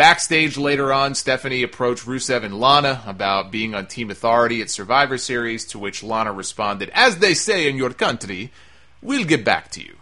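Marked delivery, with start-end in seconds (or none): 6.9-9.8 put-on swooping, lilting, swinging Russian accent. Recapping a backstage segment, quoting Lana's reply in Lana's Russian accent. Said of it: "I actually just did a better Russian accent".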